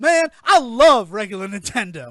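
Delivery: mock giddy fan gushing, very loud. Retelling a waiter's reaction to a nintendo shirt: imitating a giddy waiter. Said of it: "real giddy".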